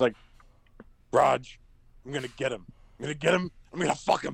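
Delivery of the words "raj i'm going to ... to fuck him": mock furious, worked-up, angry, vengeful ranting. Retelling a movie scene after the girlfriend is killed: imitating an angry movie character. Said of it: "he's just so angry".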